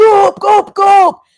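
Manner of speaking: loud high-pitched yelling. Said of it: "a yell of".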